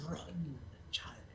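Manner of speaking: rasping voice like dry leaves. Game narrator speaks as a figure telling a character to run, raspy voice. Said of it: "raspy voice, kind of like a thousand leaves dragging across bones".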